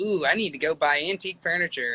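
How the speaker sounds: ordinary delivery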